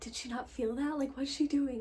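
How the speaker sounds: hushed, laughing, amused half-whisper. Recounting how others half-whispered around her, in a half-whisper. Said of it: "whispering around me like".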